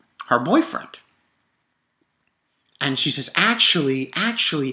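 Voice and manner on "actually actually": plain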